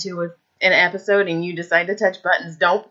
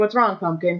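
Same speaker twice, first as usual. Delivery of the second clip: ordinary talk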